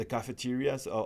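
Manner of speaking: ordinary talk, nothing marked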